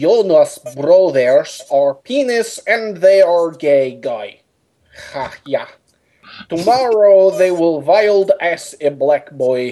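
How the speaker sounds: attempted, fake German accent. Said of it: "when people asked me if you had a German voice".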